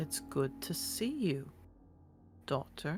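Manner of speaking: huge dragon voice, hushed, barely whispered. Voicing a huge creature who must whisper to a player: whispering giant dragon. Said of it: "I have to whisper to not blow out your eardrums".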